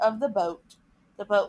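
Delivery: plain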